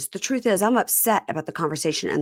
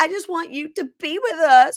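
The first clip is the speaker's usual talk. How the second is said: very high, loud, fake-weepy pleading sobs; 11 semitones higher, 5 dB louder than usual. Retelling a story, the speaker acts out Amani fake crying. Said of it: "fake cries".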